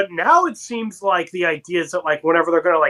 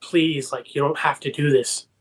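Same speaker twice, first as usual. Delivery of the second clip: put-on whisper, much quieter; 3 semitones lower, 4 dB quieter than usual. Recapping a scene where Ben whispers to Natalie, imitating a pleading whisper. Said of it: "Ben kind of whispers to Natalie".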